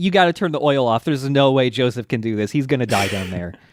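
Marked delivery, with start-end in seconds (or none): none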